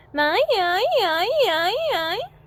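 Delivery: put-on very slow, swooping, wailing crying-baby sound. Demonstrating a voice exercise phrase, like a crying baby. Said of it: "should sound like a baby is crying".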